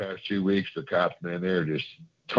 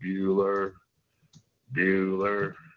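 flat, dull put-on voice. Showing how dull someone's voice is by doing the monotone Ferris Bueller's Day Off guy. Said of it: "he speaks in that monotone language".

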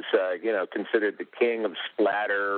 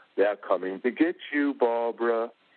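creepy, spooky, menacing horror-film villain voice; 3 semitones higher than usual. Retelling his cemetery scene, trying to get spooky with his sister, in his Boris Karloff accent. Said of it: "my Boris Karloff accent".

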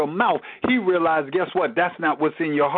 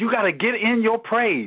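ordinary talk, nothing marked

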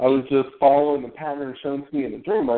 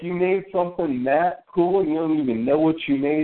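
normal talking voice

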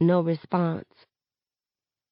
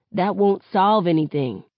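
plain

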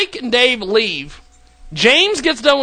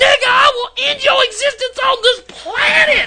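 put-on shrill, very high screaming; 12 semitones higher than usual. Retelling a man screaming at someone over the phone, retelling a scream. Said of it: "He's screaming at the phone".

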